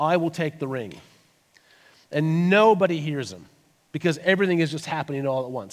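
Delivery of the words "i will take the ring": put-on very quiet, soft voice. Retelling a film scene where Frodo speaks up amid arguing: very quiet voice. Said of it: "very quietly, as loud as he can, but still quietly".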